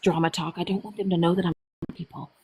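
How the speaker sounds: quiet, low whisper. Sharing gossip with a listener, whispering. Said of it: "I gotta whisper this".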